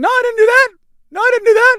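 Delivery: voice shooting up octaves, very high and loud. Imitating a coach caught on camera, voice going up octaves. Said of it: "you can hear his voice go up a couple octaves".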